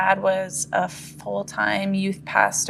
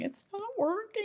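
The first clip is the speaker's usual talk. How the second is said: mock crying, voice very high and tearful; 13 semitones higher, 10 dB quieter than usual. Retelling what was said to mom as a child: imitating own past crying. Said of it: "and I was crying, saying".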